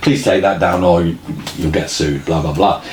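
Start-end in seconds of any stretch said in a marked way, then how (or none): none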